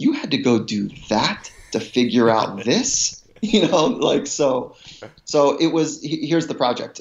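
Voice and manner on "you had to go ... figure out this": speaking through a laugh, amused. Retelling what a mentor said after the experience: imitating someone laughing while talking. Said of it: "and he's laughing".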